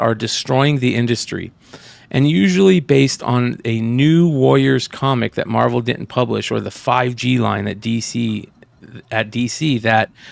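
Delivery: ordinary talk, nothing marked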